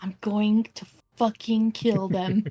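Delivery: hushed, muttered half-whisper under the breath. Voicing a character who speaks to Rue and Hummel: half-whispering under her breath. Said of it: "Just whispers under her breath".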